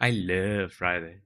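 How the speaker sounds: love said low with odd twist. Speaker copies a man's funny way of saying it, copying how he says 'love'. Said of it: "copying him because it's really funny to say it that way".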